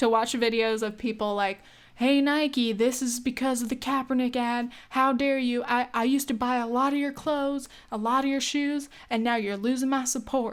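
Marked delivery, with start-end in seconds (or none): 2.0-10.5 thick put-on Southern accent. Imitating people posting videos to Nike about the Kaepernick ad, heavy Southern accent. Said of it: "I'm sorry for the accent".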